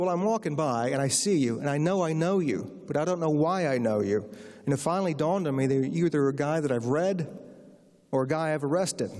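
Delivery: ordinary talk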